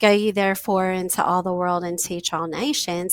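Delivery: ordinary delivery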